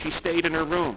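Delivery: ordinary delivery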